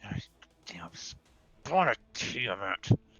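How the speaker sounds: quietly muttered and mumbled under breath. In a tabletop game, the character sees cold damage fail, muttered under breath. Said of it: "under my breath in Draconic".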